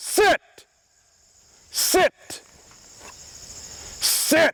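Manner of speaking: firm, angry, very high voice. Commanding a dog that did not listen: raised angry tone. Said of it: "you heard my tone get up".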